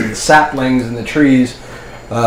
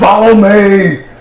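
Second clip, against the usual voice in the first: slow, loud battle-style yell. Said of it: "you just say".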